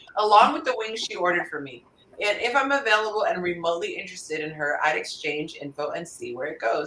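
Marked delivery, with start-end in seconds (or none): none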